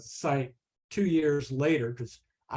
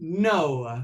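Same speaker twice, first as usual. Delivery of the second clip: put-on Italian-accented English with "no" drawn out long; 2 semitones higher, 4 dB louder than usual. Retelling the reply to a shown algorithm: imitating Antonio Stecco's Italian English. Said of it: "in his inimitable Italian English".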